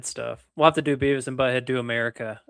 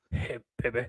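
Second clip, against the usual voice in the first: cartoon character voice; 8 dB quieter than usual. Trading cartoon quotes with another speaker: Butthead voice. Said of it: "Butthead's "Hey, baby" was great".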